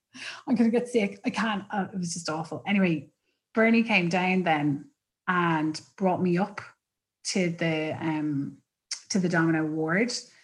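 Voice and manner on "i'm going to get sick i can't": play-acted crying, words broken by sobs. Retelling sitting in the corner during registration, imitating crying while talking. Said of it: "I was in the corner like crying".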